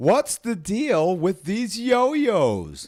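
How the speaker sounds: bad swooping high comic voice, stretched-out "yo-yos". Speaker delivers a yo-yo joke line in a Seinfeld voice. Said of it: "in my Seinfeld voice".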